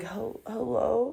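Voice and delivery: feigned sleepy voice. Retelling picking up a call from a cop, pretending to sound asleep. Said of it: "I was just pretending to be asleep".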